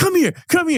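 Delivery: high-pitched yelling. Rating it a five and quoting the captain, imitating someone yelling. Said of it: "And he's yelling at them".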